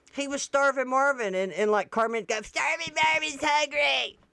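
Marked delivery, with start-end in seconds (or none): 2.5-4.1 put-on cartoon kid voice, higher. Retelling how someone quoted a South Park kid: Starvin' Marvin voice. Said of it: "And that's how he talked".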